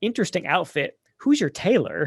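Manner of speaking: extremely sassy, swooping, dismissive tone. Quoting a movie character's line to a co-host: sassiest tone as Mister Parker. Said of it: "in the sassiest tone you can imagine".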